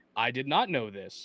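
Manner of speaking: ordinary talk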